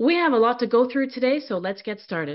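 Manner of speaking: quick, deliberate delivery with clear intent. Showing how to set the tone at the start of a meeting: fast and deliberate. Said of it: "Notice how fast I'm speaking, with deliberation".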